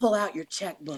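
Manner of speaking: imitated whisper. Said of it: "I'll whisper in their ear and I'll go".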